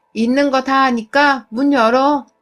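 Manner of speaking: loud, slow, drawn-out call.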